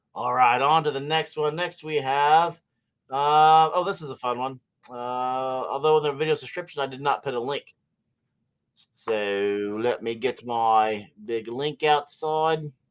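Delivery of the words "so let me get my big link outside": rough attempt at a New Zealand accent. Video host talking to viewers, attempting a New Zealand accent. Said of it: "trying to be a uh, New Zealander".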